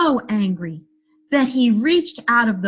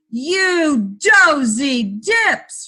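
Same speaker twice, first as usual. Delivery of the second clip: angry giant voice, stretched-out You; 4 semitones higher than usual. Narrator reading the giant finding his sheets cold and damp: roaring angry giant. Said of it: "roared the giant".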